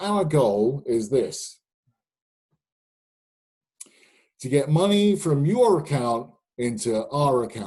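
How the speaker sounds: put-on heavy, broad Brooklyn accent, laid on thick. Retelling a business meeting, quoting what was said, in Steve's broad Brooklyn accent. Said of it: "in this broad Brooklyn accent".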